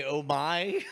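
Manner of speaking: put-on woman's voice. Imagining what the Iron Lady would say: Margaret Thatcher voice. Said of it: "the Iron Lady would say".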